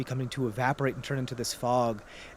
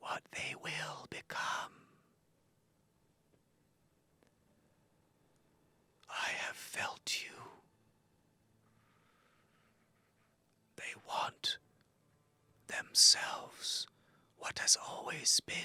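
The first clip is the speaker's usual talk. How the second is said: very quiet, wispy, gossamer-thin whisper; 10 dB quieter than usual. Narrator voicing a voice heard among the wind, gossamery and wispy. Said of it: "It's like gossamery and wispy".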